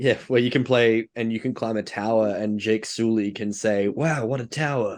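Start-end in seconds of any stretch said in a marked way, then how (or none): 3.9-5.0 deliberately poor, fake American accent. Imagining a game line for a character, in Jake Sully's bad American accent. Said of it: "in his really bad American accent".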